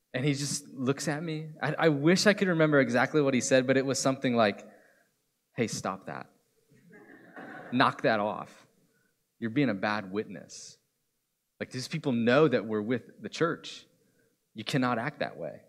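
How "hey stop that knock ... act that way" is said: mock-tender, loving, gently scolding tone. Retelling a man's scolding about being a bad witness, retelling a tender rebuke. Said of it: "he did it in this really loving way at this great tone of voice".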